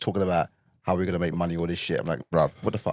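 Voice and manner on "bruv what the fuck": put-on annoyed outburst, quieter. Retelling phoning a hacked friend, imitating own annoyed outburst. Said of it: "I just got so annoyed".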